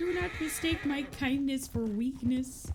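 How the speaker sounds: high, froggy cartoon puppet voice. Retelling how a chatter answered after Maggie got unhappy, in his most Kermit voice. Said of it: "in his most Kermit voice".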